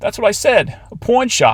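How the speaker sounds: put-on thick old-lady New York accent, very high. Reading an overheard old lady's question: heavy New York accent. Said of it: "an old lady with a heavy New York accent".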